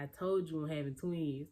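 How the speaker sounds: ordinary talk, nothing marked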